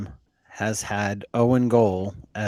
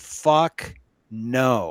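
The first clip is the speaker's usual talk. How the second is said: mock blurted, loud, emphatic reflex outburst. Retelling own answer to a question: imitating own loud reply. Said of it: "And very loudly".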